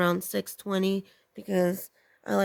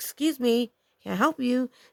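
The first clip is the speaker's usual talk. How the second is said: angry, commanding, authoritative delivery; 4 semitones higher than usual. Retelling confronting a man at the car: retelling an angry authoritative demand. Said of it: "I said it really authoritatively, like, I was very angry".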